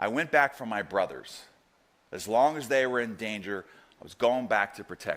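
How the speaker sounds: mock flat, low, matter-of-fact deadpan. Retelling a friend's answer about returning to war: imitating someone's deadpan reply. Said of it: "he looked at me deadpan in the eyes".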